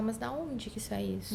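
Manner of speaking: ordinary talk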